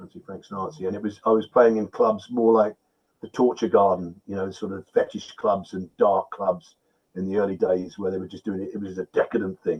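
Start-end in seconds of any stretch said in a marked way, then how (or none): 0.0-0.9 very quiet whisper, secretive like a little secret. Acting out how people once passed on a secret: imitating a whisper. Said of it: "so you whispering".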